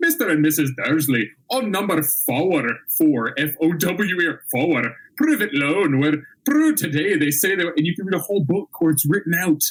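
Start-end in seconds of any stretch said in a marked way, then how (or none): 0.0-7.7 put-on Scots accent, higher. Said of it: "hear a Scottish accent in your head".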